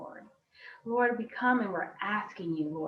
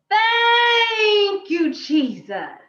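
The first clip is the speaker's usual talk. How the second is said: very loud, very high-pitched shout rising upward; 12 semitones higher, 12 dB louder than usual. Leading a group count of three, shouting thanks to heaven: shouting thank you loudly. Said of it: "we're gonna shout".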